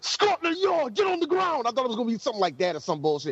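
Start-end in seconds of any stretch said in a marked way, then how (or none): 0.0-1.6 mock rough police-style shout, higher. Imagining police bursting in on a suspect: rough police shout. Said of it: "in, like, such a rough manner".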